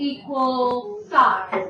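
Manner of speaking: very slow, drawn-out emphasis. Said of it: "What's equilateral mean?".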